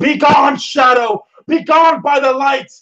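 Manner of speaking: defiant, very high-pitched scream. Player's character facing a screaming shadow creature, screaming back at it. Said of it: "I'm screaming back at it".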